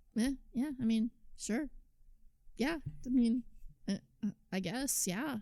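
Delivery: mocking flat, no-fun voice. Show the other person how they agree with you, imitating their no-fun agreement. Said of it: "this is how you agree with me... That's not fun".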